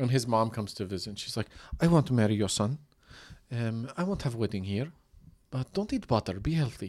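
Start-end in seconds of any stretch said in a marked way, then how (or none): 1.8-6.9 put-on Ukrainian accent, inconsistent and all over the place. Retelling what a woman from Ukraine says to his visiting mom: imitating her Ukrainian accent. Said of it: "She talks like this".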